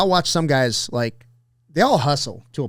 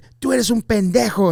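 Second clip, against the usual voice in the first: put-on woman's yell, higher; 8 semitones higher than usual. Retelling a lady yelling at them while waiting tables: imitating a lady yelling. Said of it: "she was yelling".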